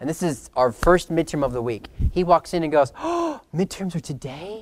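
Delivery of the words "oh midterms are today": put-on stricken, distraught, pitched up, drawn out. Retelling a classmate walking in on midterm day, imitating him distraught. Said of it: "he was just distraught".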